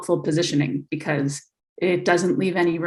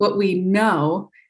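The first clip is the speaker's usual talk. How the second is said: silly, goofy mocking lilt on "know". Discussing perspectives and interpretation, putting goofy inflection on 'know'. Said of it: "I'm using goofy, like, inflection on that word".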